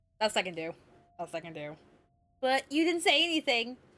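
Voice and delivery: ordinary talk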